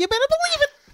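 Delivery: very high-pitched, goofy, excited enthusiastic voice. Demonstrating how nobody would actually say it, high-pitched. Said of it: "high pitch".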